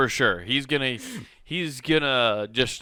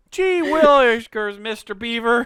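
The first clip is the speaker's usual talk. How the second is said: very high-pitched, wide-eyed gee-whiz voice; 9 semitones higher, 4 dB louder than usual. Joking about the son's alert: Leave It to Beaver voice. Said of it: "Just like a whole Leave It to Beaver episode".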